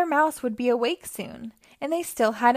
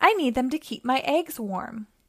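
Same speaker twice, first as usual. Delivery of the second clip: usual speaking voice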